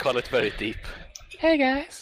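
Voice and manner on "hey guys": squeaky, pitched way up high. Imitating a podcast colleague said to have a naturally deep voice. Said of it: "That's a spot-on impression".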